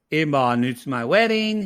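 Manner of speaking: ordinary talk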